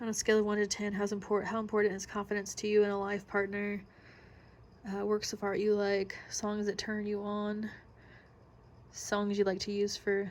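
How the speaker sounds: ordinary delivery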